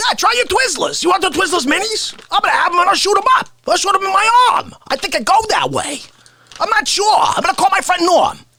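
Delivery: very high, pitched-way-up put-on comic voice. Doing impressions as a candy commercial: Artie Lang impression. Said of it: "I'm doing Artie. I gotta do Artie. Artie Lang".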